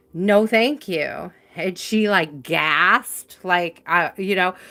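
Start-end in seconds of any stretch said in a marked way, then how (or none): 0.2-1.3 put-on firm, decisive tone. Recounting refusing an insistent woman with a raised hand, retelling a firm no. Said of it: "It was just very firmly like".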